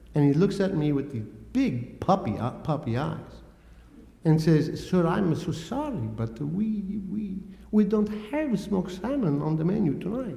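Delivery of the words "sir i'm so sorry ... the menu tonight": put-on strong Italian accent. Retelling a waiter's apology about the menu: imitating a very Italian accent. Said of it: "an Italian fellow with a very Italian accent".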